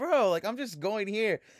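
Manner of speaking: put-on affronted, put-upon, high, offended tone. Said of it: "So he's like".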